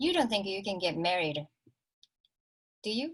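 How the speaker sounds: very cold, frosty, icy tone. Quoting what was said to the speaker's cousins, imitating a very cold tone. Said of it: "in a very cold tone".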